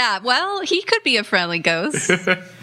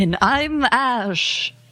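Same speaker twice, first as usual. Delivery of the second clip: spooky ghost voice; 2 semitones higher than usual. Podcast host introducing themselves on the episode: scary Halloween voice. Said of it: "I was trying to do a scary Halloween voice".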